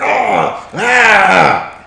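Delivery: high-pitched, loud, frustrated yelling cries. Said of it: "she's just getting frustrated".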